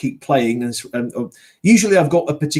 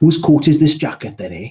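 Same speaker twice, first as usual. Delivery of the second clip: put-on Welsh accent; 3 semitones higher, 4 dB louder than usual. Explaining how to get into a welsh accent, giving a stereotypical welsh line. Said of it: "to get into a Welsh accent".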